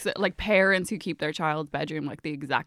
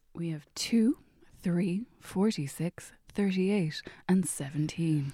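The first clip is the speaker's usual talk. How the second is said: sexy, sultry voice, much quieter; 5 dB quieter than usual. Asked to read five numbers off a sheet, in a sexy chat-line voice. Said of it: "full sexy chat line".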